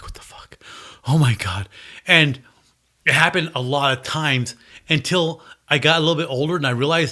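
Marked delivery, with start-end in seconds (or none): 0.0-1.7 breathy, frightened, panicked whisper. Retelling hearing noises all night outside the window: imitating own freaked-out panic. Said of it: "and I'm freaking out".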